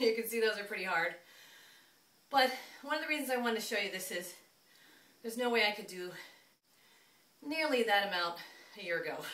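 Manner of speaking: loud, winded, panting, breathless speech. After a hard set of the exercise, the speaker talks to viewers, winded. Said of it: "I'm pretty winded".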